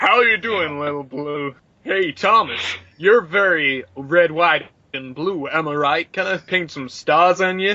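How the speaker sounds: over-the-top, exaggerated all-American accent. Playing an American engine greeting Thomas, in an American-accented engine voice. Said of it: "an engine with an American accent".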